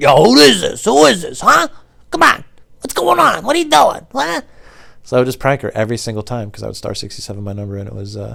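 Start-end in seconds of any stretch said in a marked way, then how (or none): 0.0-4.4 put-on thick New York accent, very high and shrill. Retelling prank calls to a woman at a pizza shop, in a thick New York accent. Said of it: "she had like a super thick New York accent".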